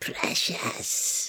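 breathy, dainty, effeminate creature whisper. Doing a requested voice of a Lady Gollum: effeminate Gollum voice. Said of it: "the Lady Gollum from Lord of the Cockrooms".

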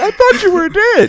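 mock very high, loud, weepy tearful crying voice. Acting out a wife opening the door to her lost husband: acted crying. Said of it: "starts crying tears, like".

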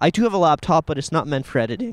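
cracking voice. Telling a story to a listener, voice cracking. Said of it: "Voice cracked".

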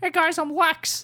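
very high, loud, squeaky puppet voice. Joking about the Batman v Superman trailers, doing a Lex voice that sounds like Elmo. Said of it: "He doesn't sound like Elmo".

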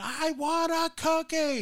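very high, long-stretched, drawn-out wailing scream. Parent retelling how a daughter reacted after being refused before dinner, imitating Kayla screaming. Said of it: "she starts screaming".

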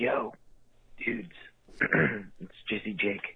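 hushed voice. Calling in while hiding so someone won't hear: whispering. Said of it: "He's whispering".

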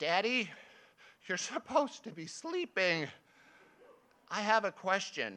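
put-on tiny little-girl voice. Father retelling bedtime beside his daughter, imitating her tiny voice. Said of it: "she says in her tiny voice".

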